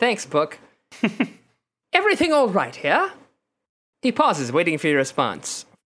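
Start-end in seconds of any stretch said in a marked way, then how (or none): 0.0-3.1 put-on British accent, sing-song. Voicing a race official who checks on the players: british accent. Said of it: "then speaks in a British accent".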